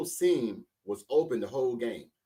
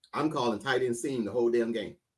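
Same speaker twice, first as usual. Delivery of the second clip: usual speaking voice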